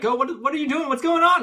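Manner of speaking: very loud, very high-pitched shouting. Role-play player chasing another character who ran off, shouting. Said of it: "I'm shouting like".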